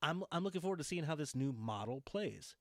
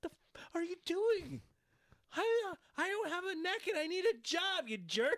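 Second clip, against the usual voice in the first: very high, jittery, nervous, slow delivery; 3 dB louder than usual. Retelling how Paige reacted when teased on camera: imitating Paige, nervous. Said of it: "but she says it like this".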